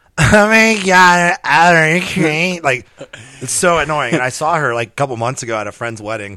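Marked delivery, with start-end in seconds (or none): 0.2-2.6 very loud, very slow, pitched-up nasal drawl. Showing the go-to impression of a girl's voice: imitating ex-wife's nasal voice. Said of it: "I'll always use that".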